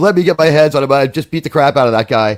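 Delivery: normal talking voice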